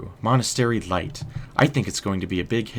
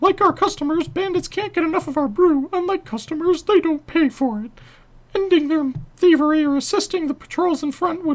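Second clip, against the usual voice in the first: very high-pitched, squeaky voice. Voicing this guy's dialogue in a Mickey Mouse voice. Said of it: "Mickey Mouse voice for this guy".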